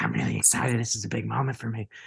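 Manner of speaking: put-on wild, crazy voice. Retelling what a woman said to John, in a crazy voice impression. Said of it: "She has this like crazy voice".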